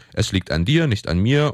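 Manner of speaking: plain reading voice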